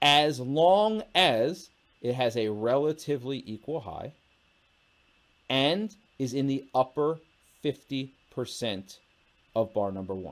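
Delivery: speaking slowly and clearly. Explaining a chart trading rule to viewers, speaking slowly and clearly. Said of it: "I'm speaking slow and clearly".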